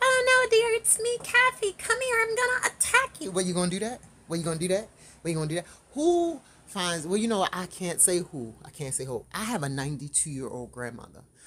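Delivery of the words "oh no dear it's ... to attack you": put-on lightened voice, pushed very high. Acting out what someone might say before an attack: put-on lightened voice. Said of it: "lighten the voice even more".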